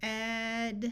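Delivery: sounding out slowly in separate segments. Showing learners how to sound out a fake word: sounding out slowly. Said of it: "Sound them out slowly".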